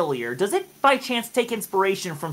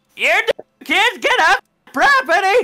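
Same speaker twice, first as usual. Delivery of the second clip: put-on ancient old-lady dragon voice, much slower; 12 semitones higher, 7 dB louder than usual. Picturing what a hag dragon would say, doing an old lady dragon voice. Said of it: "you gotta hear it like this".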